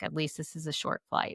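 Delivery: soft and quiet, under the breath.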